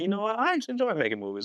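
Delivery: sudden, high-pitched excited realization. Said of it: "And I'm like".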